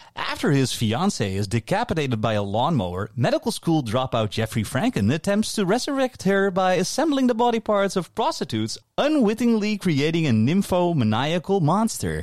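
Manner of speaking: comedy trailer narration. Reading a Wikipedia plot line aloud as if it were a funny comedy trailer. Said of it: "I'll do it as though it's a trailer for a funny comedy".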